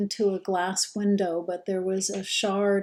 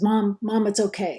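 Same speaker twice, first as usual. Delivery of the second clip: distraught, audibly coming apart; 4 dB louder than usual. Retelling the first words of a son's phone call: imitating son audibly falling apart. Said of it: "audibly falling apart".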